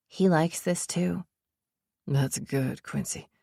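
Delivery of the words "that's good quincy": whispered, quieter. Reading a story aloud, a character praising Quincy: whispering. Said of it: "he whispers".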